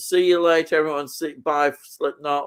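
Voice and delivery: normal talking voice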